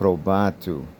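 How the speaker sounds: probatu with stress on second syllable ba. Explaining how the genitive article shifts the stress: stress on ba in probatu. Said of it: "The stress has to be now over the second syllable".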